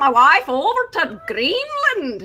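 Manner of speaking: leprechaun-like put-on accent. Finishing a line in a put-on accent: attempted Scottish accent. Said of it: "I don't think that was a Scottish accent".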